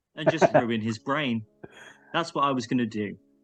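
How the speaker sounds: normal talking voice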